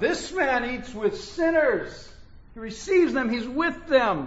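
high-pitched, complaining grumble. Speaker acting out how the religionists complained, acting out a loud complaint. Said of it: "did they say it really loud?".

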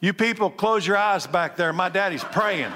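hurried, fast, rattled-off rushed calling out. Act out Michael telling people in the back to close their eyes, imitating Michael's loud voice. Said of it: "with that Michael loud voice".

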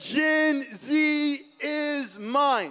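play-acted, very slow, booming shout. Speaking in church, retelling what the Lord shouted, retelling a booming shout. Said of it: "the booming voice of the Lord shout".

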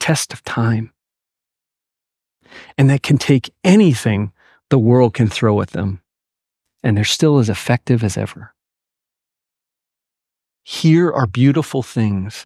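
voice welling up with tears. Explaining a Bible passage to listeners, welling up. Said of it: "I'm welling up".

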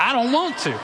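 sassy, cheeky tone. Leading a group to repeat a son's reply to his father: sassy. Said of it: "Everybody say it with a little sass".

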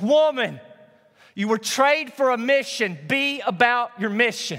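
very high pained cry. Speaker to a church congregation, retelling a bloodied man's words, raising his voice. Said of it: "raises his voice".

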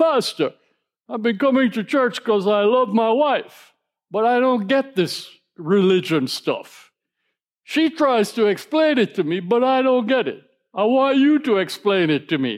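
put-on dramatic, laid-on New Jersey Italian accent. A pastor retells what a churchgoer said to him, dramatic New Jersey Italian accent. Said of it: "in his dramatic New Jersey Italian accent".

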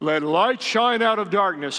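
put-on divine, godlike voice. Quoting a Bible verse to listeners, attempting a God voice. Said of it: "I can't do a God voice very well".

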